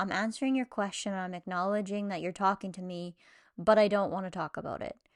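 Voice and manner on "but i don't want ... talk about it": ordinary talk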